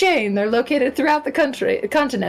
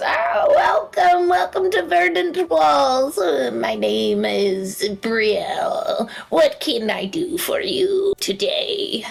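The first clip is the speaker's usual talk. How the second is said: put-on very old woman voice; 4 semitones higher than usual. Voicing an elderly shopkeeper greeting customers who walk in: elderly shopkeeper voice. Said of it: "there is an very elderly woman ... and she goes".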